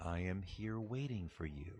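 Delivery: low, hushed, eerily calm, unbothered super-villain tone. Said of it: "eerie calm, super calm, super villain calm".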